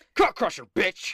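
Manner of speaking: loud, high yelled battle cry. Narrating a tabletop game fight, a character punches an enemy and is yelling. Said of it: "And he yells".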